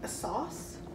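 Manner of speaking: soft, hushed, tentative whisper.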